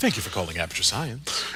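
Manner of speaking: polished, professional customer-service phone voice. Showing a code switch after asking for a fake company name: code-switched customer service voice. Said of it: "code switching is not just a voice thing".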